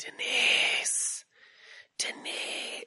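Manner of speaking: eerie, drawn whispering.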